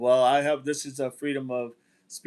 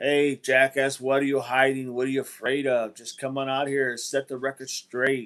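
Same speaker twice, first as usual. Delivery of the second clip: normal talking voice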